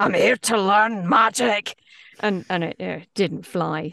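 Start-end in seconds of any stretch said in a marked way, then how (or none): 0.0-1.7 louder, put-on wrecked low voice. Retelling a recording session with a wrecked voice: Bea Arthur voice. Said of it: "like flipping B Arthur".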